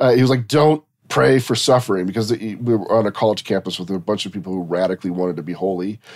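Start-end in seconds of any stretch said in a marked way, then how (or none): 0.5-2.1 raspy voice, words rasped out. Quoting Father Michael Scanlon's warning to students: raspy Father Michael Scanlon voice. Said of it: "he always had that raspy voice".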